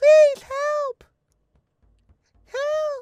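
put-on very high, very loud little-kid shout. Game master voicing a small child while players give instructions, small child shouting for help. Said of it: "You hear the voice of a small child while you're giving these instructions, shouting for help".

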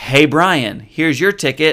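slow, measured, deliberate, drawn-out calling out. Retelling calling out to friends walking away: retelling talking loud. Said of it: "So I'm talking loud".

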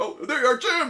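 mock very high, shouted announcer yell. Retelling a video where the announcer spots jim: retelling the announcer's yell. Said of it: "Chip yells".

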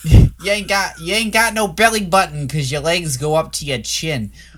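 put-on New York accent. Quoting a father in a movie talking to his daughter, new york accent. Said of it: "I did a New York accent".

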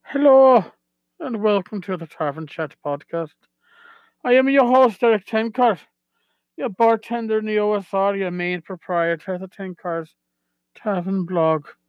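put-on Irish brogue accent. Podcast host opening the episode on a dare from his niece, in an irish brogue. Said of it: "open up the uh, episode with an Irish brogue".

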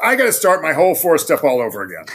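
very loud, high, swooping shout. Telling a story, the speaker acts out a man calling from the top of the stairs, retelling a shout. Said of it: "shouts out".

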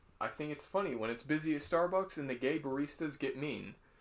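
ordinary talk

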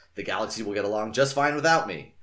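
ordinary delivery, nothing marked

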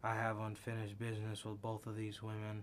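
low, dead-level, flat monotone. Mocking a wrestler's flat promo delivery: imitating Ronda Rousey's monotone. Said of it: "talking so monotone".

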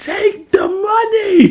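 very high-pitched shout. Retelling how he yelled at the screen while watching a show, retelling a yell at the screen. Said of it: "I was yelling at the screen like".

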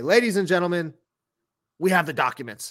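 loud, high-pitched declaiming voice. Announcing trade news to a co-host, in an Alex Jones impersonation. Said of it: "That was my Alex Jones impersonation".

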